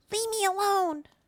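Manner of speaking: very high, small, tiny creature voice. Narrating a hissing animal that speaks in Draconic: little voice. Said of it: "you hear a little voice say".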